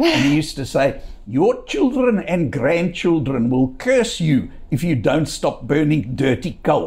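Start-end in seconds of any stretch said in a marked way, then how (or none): 1.3-6.9 put-on speaking with an Afrikaans accent. Copying a university professor of applied mathematics in his lectures, imitating a very heavy Afrikaans accent. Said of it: "a very heavy Afrikaans accent, and I'll try and copy it".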